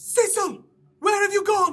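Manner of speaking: very high, very loud yelling. Game master voicing a man calling for Cecil down the hall, yelling. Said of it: "He yells".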